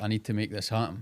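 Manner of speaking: plain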